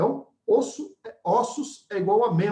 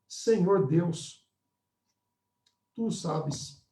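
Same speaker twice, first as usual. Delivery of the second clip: mock tearful, slow, grief-choked voice; 3 semitones lower, 4 dB quieter than usual. Acting out Ezekiel answering God with tears: Ezekiel with acted choked-up voice. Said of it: "com a voz embargada".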